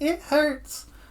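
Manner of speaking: put-on tiny childlike voice, very high-pitched. Speaker retelling a character's line, in a little child voice. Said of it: "in his little child voice".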